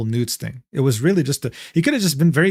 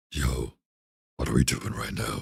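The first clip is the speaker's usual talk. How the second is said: deep, low, grinding voice; 12 semitones lower, 9 dB quieter than usual. Asked whether a put-on voice would hurt the throat, the speaker demonstrates: Batman voice. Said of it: "If I just straight up start sounding like Batman".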